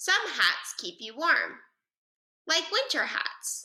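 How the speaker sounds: short pause following warm. Reading a sentence aloud to model a comma, short pause after warm. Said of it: "Did you see how I took a quick pause after I read the word warm and before I read the word like?".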